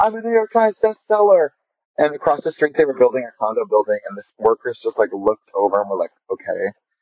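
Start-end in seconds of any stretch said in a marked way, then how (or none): 0.0-1.5 put-on high-pitched screaming. Speaker recalls running onto the condo patio on hearing the news, retelling a scream. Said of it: "I ran out on the patio of my condo and I screamed".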